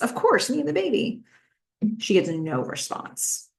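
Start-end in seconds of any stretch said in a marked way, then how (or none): 0.0-1.2 mock, pitched-up, of-course matter-of-fact tone. Retelling a character's reply about who "we" is: imitating an obvious "of course" tone. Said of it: "with, "Of course," in her voice".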